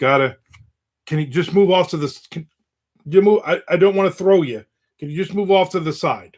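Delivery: put-on nervous, anxious, halting, stumbling delivery. Retelling asking someone in the hallway to move: imitating own anxious request. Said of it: "I'm anxious and I'm nervous".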